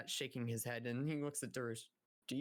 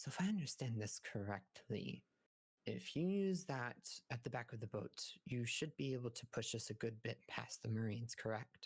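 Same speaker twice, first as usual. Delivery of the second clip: whispered voice. Walking past Orion with another man, a character asks him something, whispering. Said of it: "you can hear him whispering".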